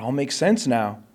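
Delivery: normal talking voice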